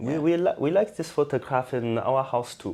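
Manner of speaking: terrible put-on German accent. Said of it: "I did a terrible German accent".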